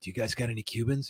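very quiet, hushed, secretive whisper. Retelling how a customer comes in and asks: imitating a whisper. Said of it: "he whispers to you".

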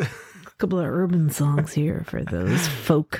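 put-on American accent. Acting out their past self picking songs for a crowd: put-on American accent. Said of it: "I don't know why I'm speaking American accent".

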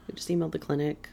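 soft, quick, sad, bummed delivery. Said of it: "Why do you sound so sad right now?".

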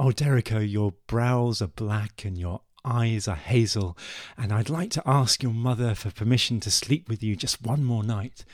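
ordinary talk, nothing marked

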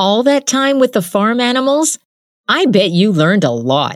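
quick, high, snapping delivery. A girl in class answers classmate Jin's remark; retorting. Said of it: "she retorted".

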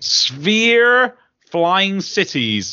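strong West Country accent, "sphere" drawn out. Presenting upcoming games, the speaker announces the next title in a West Country accent. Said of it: "I went really West Country there".

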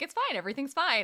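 mock very high, fast, half-crying, half-laughing voice. Retelling a scene where Suki has a panic attack, imitating Suki crying and laughing.

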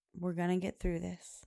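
normal talking voice

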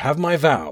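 plain

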